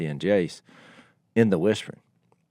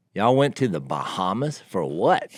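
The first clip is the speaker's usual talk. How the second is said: ordinary delivery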